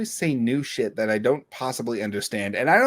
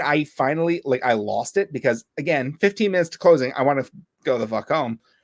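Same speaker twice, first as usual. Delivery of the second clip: normal talking voice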